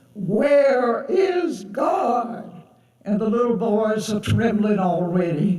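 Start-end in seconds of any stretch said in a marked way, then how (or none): 0.2-2.5 menacing, scary preacher voice. Telling a story where the pastor questions the little boys, imitating a scary voice. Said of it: "the pastor says in that scary voice".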